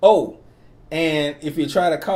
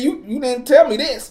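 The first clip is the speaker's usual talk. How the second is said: sudden loud outburst, higher; 8 semitones higher, 3 dB louder than usual. Retelling how a quiet guest suddenly spoke up: imitating someone suddenly in full voice. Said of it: "she was full voice".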